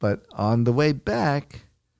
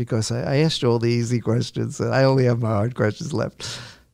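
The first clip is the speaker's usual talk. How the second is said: ordinary delivery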